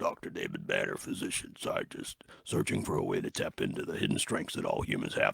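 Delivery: hushed, whispered narrator voice. Discussing an old episode, trying the opening narration: Incredible Hulk narrator impression. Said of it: "I can't do an impression of the pipes, but I try".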